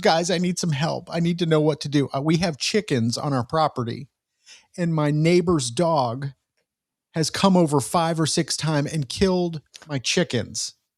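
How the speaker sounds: sobbing, tearful, emotional delivery. Retelling what a young woman said on TikTok, imitating her sobbing. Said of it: "she gets on TikTok and she's sobbing. She goes".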